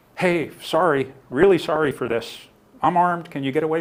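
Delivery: steady, calm, sorry-sounding apologetic tone. Demonstrating how an armed person asks someone to back away: calm and apologetic. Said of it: "You're not rude. You're not angry. And don't yell it".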